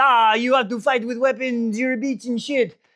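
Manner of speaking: put-on French accent. Retelling a fighter's taunt in a story: French accent. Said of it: "I don't know why I went French there".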